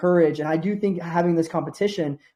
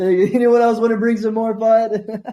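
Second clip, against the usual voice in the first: talking through laughter, higher pitch; 5 semitones higher than usual. Asking the listeners for more doubts and objections, laughing while talking. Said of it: "I'm sorry I'm laughing about it".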